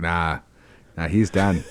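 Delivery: put-on Australian accent. Imitating paramedics walking up after a crash: imitating Australian paramedics. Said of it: "in their Australian accents and they're like".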